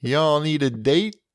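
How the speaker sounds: Memphis-accented speech. Talking to listeners, a host jokes about Memphis; Memphis accent. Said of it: "That was a great Memphis accent you just did".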